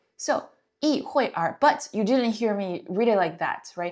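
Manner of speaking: ordinary talk, nothing marked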